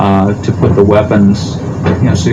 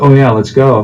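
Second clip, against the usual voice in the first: ordinary talk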